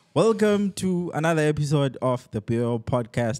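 slow, scripted, read-aloud delivery. Opening a podcast episode with a welcome: sounding like reading aloud.

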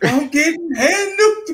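play-acted scared, anxious, high, worried voice. Retelling a teammate's line while playing Dying Light; imitating a fearful, worried voice. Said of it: "the fear and the worriness in her voice".

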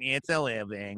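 glum, woeful, resigned woe-is-me bird voice. Recalling a cartoon bird's catchphrase in its own voice: imitating the bird's woeful voice. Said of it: "he always had a voice".

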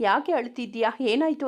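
ordinary delivery

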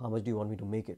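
put-on hushed whisper. Voicing an economist asked how much two plus two is: imitating a hushed whisper. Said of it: "in a hushed whisper ask".

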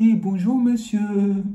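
high, put-on, honeyed, sugary-sweet voice. Imitating witches who fake a sweet voice to greet a man, fake sugary-sweet voice. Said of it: "Elles font semblant d'avoir une voix doucereuse".

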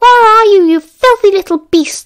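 very loud, high, shrieking nasal screech. Matron stalks the hallways searching for someone, in Matron's nasal screech. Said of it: "Matron's nasal voice screeched".

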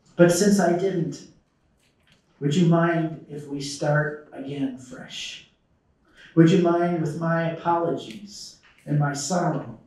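slow, catching voice, choked with feeling. Voicing an apology to an estranged child, choked up with emotion. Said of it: "I get choked up even talking about it".

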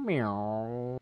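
drawn-out mock cat meowing.

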